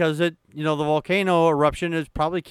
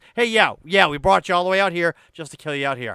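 dripping sarcasm, fake agreement, heavy sarcastic jab. Acting out Moses answering the claim he brought everyone out to die: imitating Moses being sarcastic. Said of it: "Moses' sarcasm button just got pressed".

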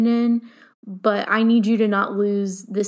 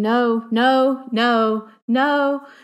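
very slow, drawn-out, stretched-out screaming; 3 semitones higher than usual. Contrasting Jones's polite phrasing with their own outbursts, mimicking own screaming. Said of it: "when I start screaming".

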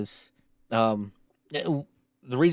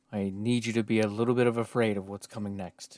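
mock grave tone, quieter; 4 dB quieter than usual. Teasing the co-host about the next topic: put-on serious tone. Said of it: "after the tone of your voice".

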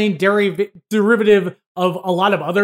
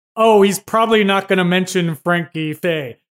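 pompous, self-important comedy-buff tone. Imitating own past reaction while reading the book: mock pompous comedy-history voice. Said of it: "better im-, impersonation of me being comedy history pompous".

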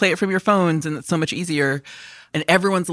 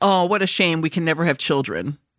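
flat, dead straight deadpan delivery. Retelling a woman's reply after being asked a man's age, imitating deadpan delivery.

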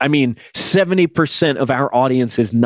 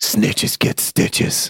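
rough, gravelly superhero voice with a gravelly edge; 4 semitones lower, 3 dB quieter than usual. Retelling a rumored phone call someone got, in a gravelly Batman voice. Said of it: "a gravelly voice. Sounded like Batman".

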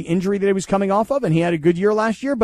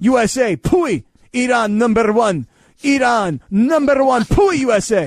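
put-on voice, every word dragged out very slowly; 3 semitones higher, 4 dB louder than usual. Answering another speaker's question with an impression: Iron Sheik impression. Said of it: "like the Iron Sheik now?".

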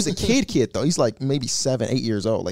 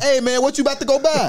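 play-acted overly loud, high yell; 13 semitones higher, 3 dB louder than usual. Retelling how a man in an Uber talked to them; imitating him yelling overly loud. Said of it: "Overly loud".

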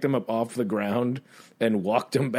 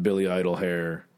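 plain

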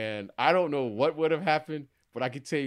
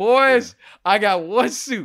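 put-on very loud, booming, slow country North Carolina accent; 9 semitones higher, 11 dB louder than usual. Retelling a teammate's words before a game, imitating a north carolina accent. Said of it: "his North Carolina accent".

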